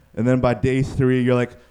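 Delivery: normal talking voice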